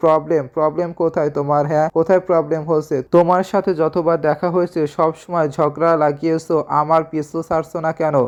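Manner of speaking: ordinary delivery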